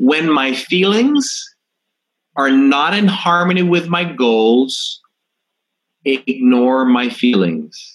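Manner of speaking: slow, deliberate, word-by-word, stretched out. A speaker stating a belief so the audience can write it down, said slowly. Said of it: "i'll say it slowly so you can write it down".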